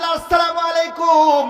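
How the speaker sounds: slow, drawn-out calling voice.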